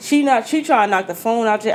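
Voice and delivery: ordinary talk, nothing marked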